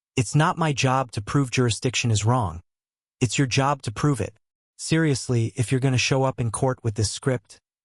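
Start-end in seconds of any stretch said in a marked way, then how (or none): none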